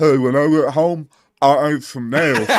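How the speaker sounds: voice like a busted jaw. Acting out a guy, the speaker uses a jacked-up jaw voice. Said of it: "exactly how I'd imagine if somebody had a jacked up jaw".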